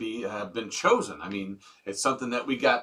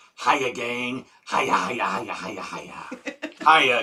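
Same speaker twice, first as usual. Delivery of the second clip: slow frog voice, each word drawn out; 4 dB louder than usual. A listener tunes in and greets the gang, doing a Froggy impression. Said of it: "says in his best Froggy impression".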